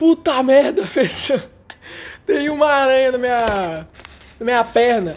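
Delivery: play-acted sudden, frightened, startled outburst. Recounting finding a spider on their leg during class: retelling a frightened shout. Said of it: "Aí eu gritei".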